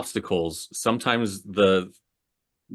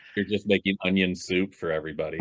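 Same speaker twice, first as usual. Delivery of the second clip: ordinary talk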